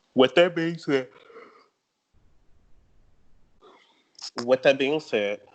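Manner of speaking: talking through a yawn. Player explaining their game strategy, yawning while speaking. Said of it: "sorry, I'm yawning".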